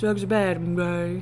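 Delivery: low, slow, drawn-out voice. Doing an impression another speaker asked for: Mister Mackey voice. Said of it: "you can do, uh, Mister Mackey".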